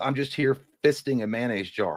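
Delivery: ordinary delivery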